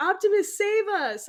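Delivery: very high-pitched, desperate-sounding scream. Speaker recalls riding the Transformers ride, acting out screaming at the screen. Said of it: "I'm like screaming at the screen".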